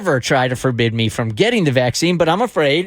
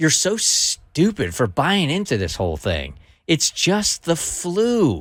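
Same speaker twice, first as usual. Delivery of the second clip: condescending know-it-all tone, 'flu' drawn out; 3 dB quieter than usual. Imitating friends who scorn people getting the vaccine: imitating a condescending tone. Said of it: "it's a condescending tone".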